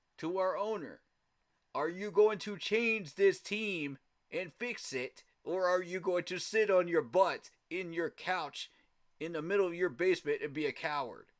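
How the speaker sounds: loud, angry, ranting yell. Speaker calling out the team's owner, yelling angrily. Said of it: "I'm yelling that because you pissed me off".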